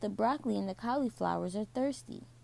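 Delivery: ordinary delivery, nothing marked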